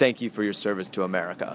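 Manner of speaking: ordinary talk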